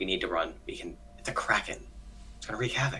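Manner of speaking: hushed, barely voiced, very quiet whisper. A player's character, as close as possible to Artemis, speaks to her, whispering. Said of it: "and I whisper to her".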